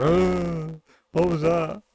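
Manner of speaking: groggy, very slow drawl with drawn-out ah. Recapping a game, the speaker voices Marcel waking to a noise: imitating half-asleep Marcel. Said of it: "Marcel's half asleep going".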